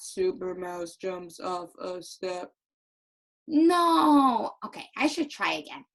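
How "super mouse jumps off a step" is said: dull, lifeless, flat, low, boring storybook-style reading. Reading a story line to show how not to read it: boring flat voice. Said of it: "Can you tell that he's happy when I read it like that?".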